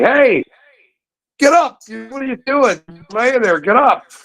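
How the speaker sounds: put-on yelling. Retelling a bike crash where a buddy yelled to get up: imitating Bob Hamway yelling. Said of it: "my buddy Bob Hamway starts yelling at me".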